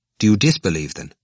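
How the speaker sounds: plain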